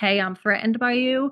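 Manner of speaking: normal talking voice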